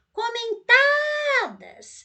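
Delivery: comentadas with the syllable ta stressed and stretched. Showing how to find the stressed syllable of comentadas: lengthened, stressed ta. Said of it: "Você viu que você prolongou esse tá aqui?".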